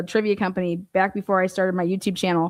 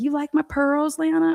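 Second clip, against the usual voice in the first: put-on older woman's voice, higher; 8 semitones higher than usual. Retelling what the older woman asked: imitating Dottie. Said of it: "She's like".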